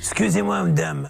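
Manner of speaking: rough, creaky TV detective voice. Addressing a woman about kitchen plans, doing a Columbo impression. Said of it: "C'est Une imitation de Colombo".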